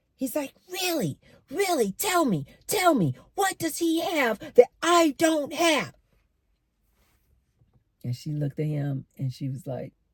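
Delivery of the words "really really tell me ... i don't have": play-acted very high-pitched, upset, insistent begging. Retelling a story, the speaker voices a man demanding an answer from a woman, acting upset. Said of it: "And he's getting real upset".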